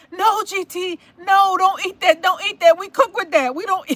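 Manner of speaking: urgent, high-pitched, loud screamed delivery. Retelling a reaction while watching someone eat a pepper: imitating own screaming at the TV. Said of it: "I was screaming at the T V".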